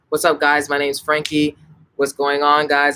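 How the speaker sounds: flat, level, one-tone monotone. Showing how English is spoken on one tone: flat monotone. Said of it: "I'm speaking monotone".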